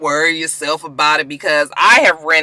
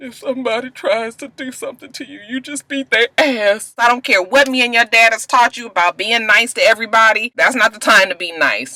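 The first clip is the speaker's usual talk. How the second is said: put-on emotional, high-pitched voice; 6 semitones higher than usual. Retelling a mother who gets emotional talking to her baby: imitating someone getting emotional. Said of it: "she gets emotional".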